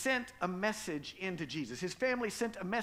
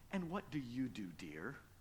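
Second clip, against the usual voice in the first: very low, soft, patronizing and condescending tone; 8 semitones lower, 9 dB quieter than usual. Retelling what people at social occasions would say to a mom: mock-condescending tone. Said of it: "kind of in a condescending tone".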